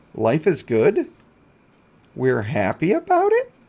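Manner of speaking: lines lifting up with rising upward inflection. After picking up a stone, speaking with an upward inflection. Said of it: "saying that with an upward inflection".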